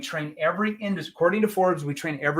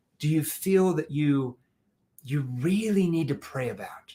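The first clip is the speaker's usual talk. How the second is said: slow, low, unhurried, caring, empathetic voice. Teaching how to ask about prayer needs: slow, lowered empathetic voice. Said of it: "I slowed that down".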